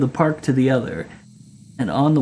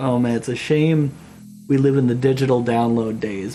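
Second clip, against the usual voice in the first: ordinary talk, nothing marked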